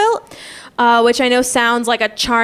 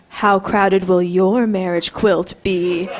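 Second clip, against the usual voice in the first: spooky, low, scary storyteller voice; 4 semitones lower than usual. Retelling how the teacher asked the entire class, in a very scary campfire voice. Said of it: "in a very scary campfire voice".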